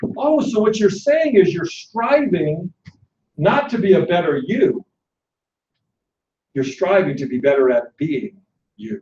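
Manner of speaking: play-acted, calm, easy delivery without any fuss. Retelling the reply of the man he described this to, imitating someone speaking calmly. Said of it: "Steve calmly says to me".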